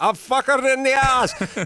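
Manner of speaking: put-on angry Greek accent. Imitating the other speaker's greek dad, described as talking in a big accent and very angry: imitating a dad's big greek accent. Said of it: "big accent and very angry".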